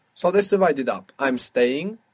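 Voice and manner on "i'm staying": ordinary talk, nothing marked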